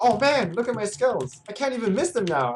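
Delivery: very high-pitched, boasting voice. Retelling a scrim, imitating fifty after buying the duress. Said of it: "he's like".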